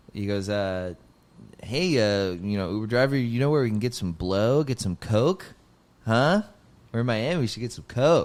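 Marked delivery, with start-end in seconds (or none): 1.6-8.3 laid-back, try-hard cool, would-be funny joking voice. Retelling how the opener talked to the uber driver: imitating the opener acting cool. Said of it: "trying to be, like, cool and funny".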